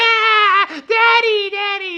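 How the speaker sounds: mock very high sobbing little kid cry. Telling how a slammed door hit Simon's face, the speaker is imitating Simon crying. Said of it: "So he starts crying".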